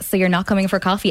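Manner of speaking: ordinary talk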